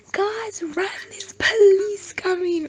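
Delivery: very loud, very high, shrill scream. Retelling how her mom screamed from the yard, imitating a mom screaming. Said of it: "just scream from the yard".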